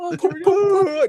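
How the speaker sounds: shrill, very high, loud fake sobbing. Retelling how Pennywise manipulated someone, doing Pennywise's fake crying. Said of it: "He did the fake crying".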